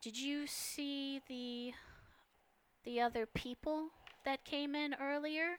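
breathy, darker feminine voice.

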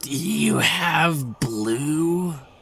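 eerie, high, ghostly banshee woman voice, very slow. Voicing a ghostly banshee woman asking about Avon: ghostly banshee woman voice. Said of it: "She ignores you entirely, Viney, and goes".

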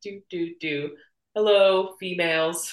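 slow, awkward, clueless man parody voice. Laughing while imagining the director asking women questions: mocking a clueless man. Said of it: "imagining this man being like".

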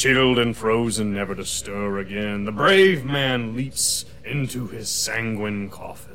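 booming, unearthly, inhuman, solemn voice. Game master voices a voice booming down at the players from above: booming, not entirely human voice. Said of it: "You hear a voice that is not, does not sound entirely human, but booms out above you and says, ... And about that time you hear booming out from above you. You hear a voice that is not, does not sound entirely human, but booms out above you and says".

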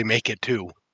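hushed, close-up half-whisper, stage whisper. Half-whispering to the dwarf while invisible: half-whispering in the dwarf's ear. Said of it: "I'm just whispering in the dwarf's ears".

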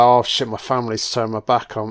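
ordinary delivery

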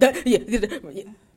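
loud, flustered stutter, tripping over the words. Retelling how a friend reacted to flirting: imitating Charity stuttering. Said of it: "Charity was stuttering".

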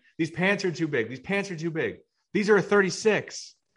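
put-on man's high yell, repeated over and over. Recounting a man in the next changing room, the speaker acts him out: retelling a man yelling. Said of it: "starts yelling".

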